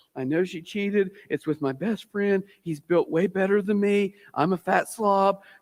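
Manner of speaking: put-on crying voice. Acting out a friend pouring their heart out: imitating someone in tears. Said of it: "You're in tears".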